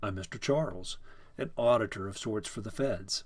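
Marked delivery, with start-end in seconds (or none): none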